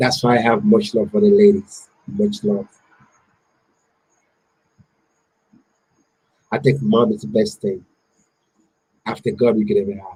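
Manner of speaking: choked-up, swooping voice, fighting tears. Talking about never knowing his dad and losing his brother, holding back tears. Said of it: "Don't cry, brother".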